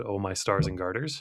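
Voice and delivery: plain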